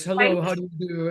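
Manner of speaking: stiff, very official-sounding voice. Imitating a manager who won't smile when shaking hands: very official sounding voice. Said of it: "I'm gonna use this very official sounding voice".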